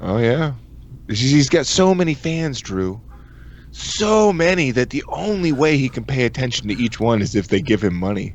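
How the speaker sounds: teasing, mocking, sarcastic tone. Ribbing someone about how many fans he has, sarcastic. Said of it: "I'm just saying it in a sarcastic way".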